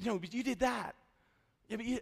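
hushed voice. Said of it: "I'm kinda whispering".

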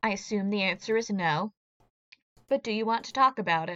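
hushed, quiet, soft-spoken, low-key. A player's character ignores a remark, then speaks up quietly. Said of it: "And just kind of quietly says".

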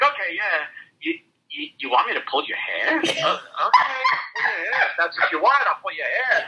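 high sing-song, pitch swooping wide and high. Acting out agreeing to a partner's request: Larry David impression. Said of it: "Are you doing a Larry David impression?".

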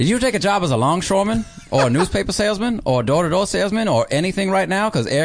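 put-on Mid-Atlantic accent. Performer improvises an ad read on the spot, in a Mid-Atlantic accent. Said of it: "do an ad read for Chassis Ball Patter in the Mid-Atlantic accent".

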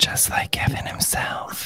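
secretive whisper, hushed, soft and breathy. Picking up a line from a co-speaker, whispered. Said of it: "I'll whisper it".

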